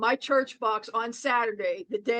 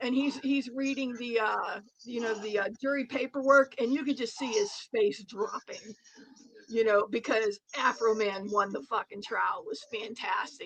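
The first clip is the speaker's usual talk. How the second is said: ordinary delivery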